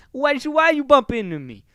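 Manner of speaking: very high, very loud, swooping bad Italian American accent. Imagining a confrontation after someone bumps into the speaker; crappy Italian American accent. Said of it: "do a crappy Italian American accent here".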